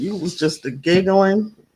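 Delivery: ordinary talk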